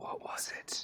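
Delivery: very quiet, breathy, barely-there whisper. A player speaking in character as it gets darker, in a whisper. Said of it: "kind of whispers like".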